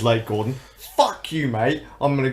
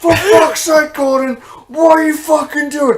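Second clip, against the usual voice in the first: put-on drunken scream, higher and louder; 7 dB louder than usual. Retelling being nagged to press a button: imitating screaming like a drunken parent. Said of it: "screaming at me like this fucking drunken parent".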